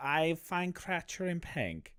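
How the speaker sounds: soft, mumbled put-on European accent, broken English. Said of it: "he speak like that. He have voice. He go".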